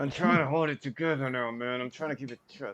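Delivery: speaking through gritted teeth, jaw held shut. Holding a robe closed with the teeth while talking: mock talking through clenched teeth. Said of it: "Are you gonna be talking like that".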